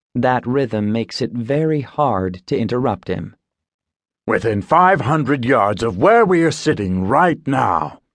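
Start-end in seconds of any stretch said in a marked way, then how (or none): 4.2-7.9 grave, stern, serious voice. Sumner speaks to the narrator and a playwright, stern. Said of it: "he says sternly".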